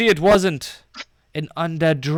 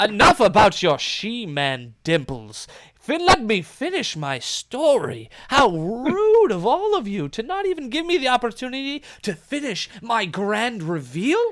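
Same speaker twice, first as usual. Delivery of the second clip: high voice with swooping pitch; 6 semitones higher than usual. Voicing the man on the stool who interrupts: man on the stool voice. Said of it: "the man on the stool says".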